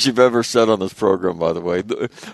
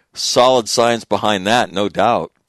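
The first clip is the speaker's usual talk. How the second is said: ordinary talk, nothing marked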